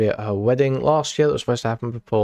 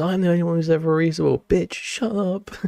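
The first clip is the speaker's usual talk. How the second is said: scratchy, raspy put-on voice, a little high; 7 semitones higher than usual. Imagining Keffels saying a chat line: raspy Keffels voice. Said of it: "raspy-ass voice".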